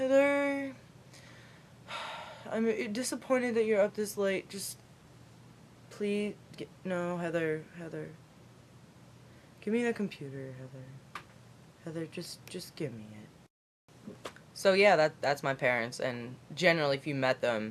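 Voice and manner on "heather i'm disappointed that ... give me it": soft, drowsy, sleepy, worn-out voice. Retelling how mom comes in late at night, eyes squinting: imitating mom, sleepy and tired. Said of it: "my mom wouldn't always be all squinty-eyed and tired".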